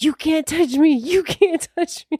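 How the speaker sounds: shrill, frightened shouting, very high pitched. Retelling a first haunted house visit as a scarer comes close, retelling own past shouting. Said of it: "I just started shouting at him".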